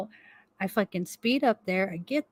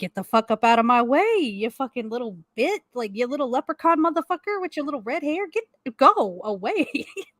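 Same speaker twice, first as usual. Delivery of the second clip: mock frazzled, flustered, insulting, cursing rant; 4 semitones higher than usual. Retelling being asked for ID and a mask: retelling a flustered outburst. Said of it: "I'm flustered".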